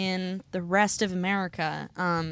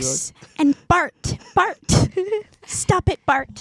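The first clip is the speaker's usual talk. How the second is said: put-on cartoon girl voice, higher and louder; 10 semitones higher, 5 dB louder than usual. Asked to say something to Cameron: Lisa Simpson voice. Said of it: "Do you have any voices to give back?".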